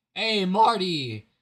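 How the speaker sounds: loud voice that breaks mid-word. Greeting marty as he joins this morning, with a voice crack. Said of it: "that was a voice crack of the century".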